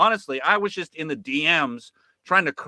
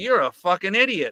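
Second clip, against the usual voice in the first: condescending, pitched-up, dripping sarcasm; 5 semitones higher than usual. Retelling what was said to an interviewee: imitating own sarcastic tone. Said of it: "the tone of sarcasm coming out of my mouth".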